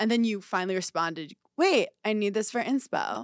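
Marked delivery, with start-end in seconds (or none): 1.6-3.2 mock snippy, bitchy, dismissive brush-off tone. Speaker acts out the listener's late reply, as a mock-bitchy impression. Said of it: "that impression of me... That was very bitchy".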